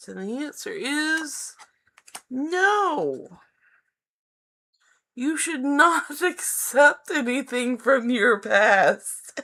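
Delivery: high laughing talk with drawn-out no. Giving a card's answer about accepting the past, laughing while speaking. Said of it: "I'm sorry, I'm laughing".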